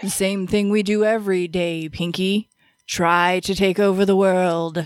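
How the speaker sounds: deep, low, deliberate, measured cartoon mastermind voice. Talking about Pinky and the Brain, quoting the cartoon's famous line in a Brain voice. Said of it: "I don't really have the deep enough voice for it".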